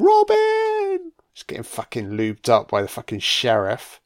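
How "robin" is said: very high mock scream. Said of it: "where she screams".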